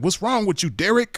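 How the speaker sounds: high-pitched, nagging scolding. Acting out how derek's baby mama would get at him, imitating a scolding baby mama. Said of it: "Like Derek's baby mama would get at him like".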